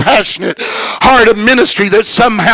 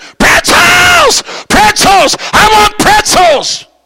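put-on screaming fit, very high and unhinged; 12 semitones higher than usual. Telling a story, the speaker acts out the middle-seat passenger: retelling a man screaming. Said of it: "He starts screaming".

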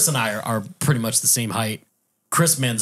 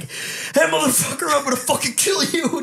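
put-on very high, furious shrieking scream. Retelling a friend screaming threats from his yard: imitating someone screaming threats. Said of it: "screaming at us from across this pond".

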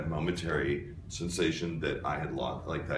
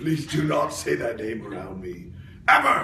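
very loud, pitched-up anime-style yell; 7 semitones higher, 8 dB louder than usual. Told that Kakarot's name was mentioned, answering in the Vegeta voice. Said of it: "doing the voice of Vegeta".

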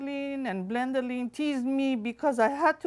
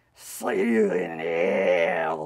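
very low, slow, menacing villain voice; 4 dB louder than usual. Playing both good guy and bad guy, the narrator speaks in the bad guy voice. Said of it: "I say with the bad guy voice".

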